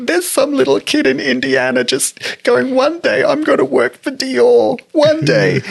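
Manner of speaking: put-on very high-pitched words spoken through sobs. Retelling own words after collapsing at a show: retelling own sobbing speech. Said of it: "And I'm just sobbing".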